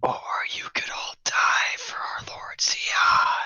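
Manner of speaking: possessed whisper, as if something else speaking. The storyteller voices Basham speaking to the party: Basham's whisper. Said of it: "Basham whispers".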